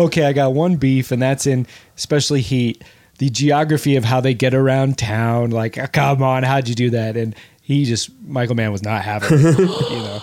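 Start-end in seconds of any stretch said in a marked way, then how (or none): none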